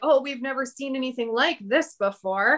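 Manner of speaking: ordinary talk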